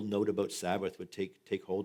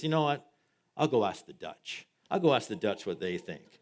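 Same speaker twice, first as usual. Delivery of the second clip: fed-up, irritated, raised voice; 2 semitones higher, 6 dB louder than usual. Telling a joke, acting Moses as he gets irritated: irritated Moses. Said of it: "getting a little, uh, irritated by the whole process".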